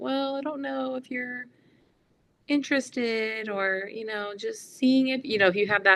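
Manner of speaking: whining voice, high pitched and slow.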